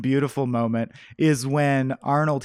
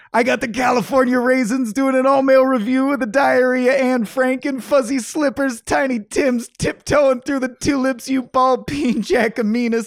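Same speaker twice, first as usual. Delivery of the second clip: put-on angry yell, higher and louder; 11 semitones higher, 5 dB louder than usual. Reading the chief's favorite line from the movie: imitating the chief angrily yelling. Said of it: "the chief angrily yelling at them".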